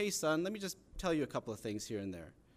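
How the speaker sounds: ordinary delivery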